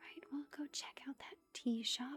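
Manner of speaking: hushed whisper. Narrating a sleep story to drowsy listeners, whispering. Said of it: "I don't know why I'm whispering".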